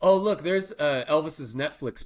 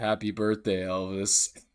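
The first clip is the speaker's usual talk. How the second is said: glum, joyless, sad, mopey delivery; 4 semitones lower than usual. Retelling a group's birthday greeting for a video: imitating a sad delivery. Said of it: "but it was so sad".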